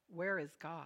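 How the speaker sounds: firm, low, quiet tone. A pastor questions an eight-year-old boy: stern. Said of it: "asked the boys sternly".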